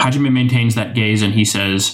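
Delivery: ordinary delivery, nothing marked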